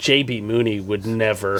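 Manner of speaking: low, dead-serious, smug, overconfident delivery. Retelling what Adrian said: imitating Adrian, serious and overconfident. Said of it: "all serious and with just the, like, unwarranted confidence".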